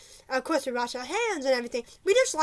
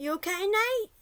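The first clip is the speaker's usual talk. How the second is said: small, high little voice; 7 semitones higher than usual. Retelling what the speaker said to their friend nate as he began to gag, little voice. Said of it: "In my little voice".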